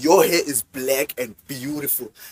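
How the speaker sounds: heavy stress on beautiful, slowed down. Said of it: "Emphasis on beautiful".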